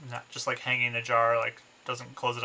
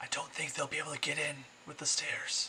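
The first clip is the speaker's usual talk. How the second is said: hushed, soft whisper; 3 semitones higher, 7 dB quieter than usual. A character speaks up while others patrol the streets, whispering. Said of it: "Angelica whispers".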